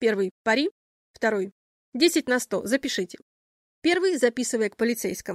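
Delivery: ordinary delivery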